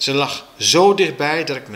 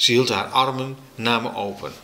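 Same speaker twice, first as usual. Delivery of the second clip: ordinary delivery, nothing marked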